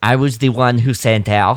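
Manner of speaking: shoddy, bad put-on French accent. Retelling what Glee says on standing up, in a bad French accent. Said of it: "that's my shit impression of a French accent".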